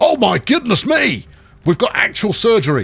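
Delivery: thrilled outburst. The speaker suddenly notices surgery taking place and exclaims, very excited. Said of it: "I got very excited there".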